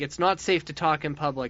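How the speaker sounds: ordinary talk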